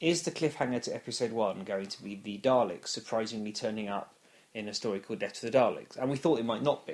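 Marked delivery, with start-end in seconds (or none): none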